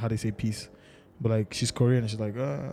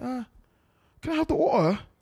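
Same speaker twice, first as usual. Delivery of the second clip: put-on British accent, pitched very high; 12 semitones higher than usual. Showing how an intentionally learned accent sounds, in a british accent. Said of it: "I'm using British accent".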